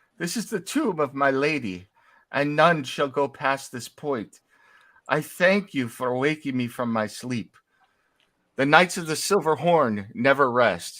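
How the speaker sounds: weeping, crying voice of a ghostly knight. Narrating a game, the speaker voices a ghost knight, crying as he speaks. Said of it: "cries for a moment".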